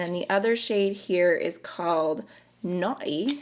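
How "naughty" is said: Naughty said in a put-on British accent. Reading out the name of a pink shade: British accent. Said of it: "Don't know why that needed a British accent".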